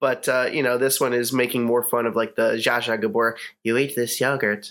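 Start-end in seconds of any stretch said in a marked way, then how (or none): 3.6-4.7 eerie, creepy delivery. Quoting a line from a satirical movie to friends, in a creepy voice. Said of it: "you're doing it so creepily".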